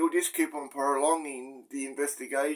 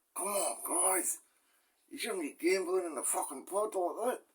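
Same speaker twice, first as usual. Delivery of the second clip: soft, murmured, under-the-breath mutter; 4 semitones higher, 4 dB quieter than usual. Describing the laid-back CEO walking past, the speaker imitates his muttered aside. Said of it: "quietly say under his breath".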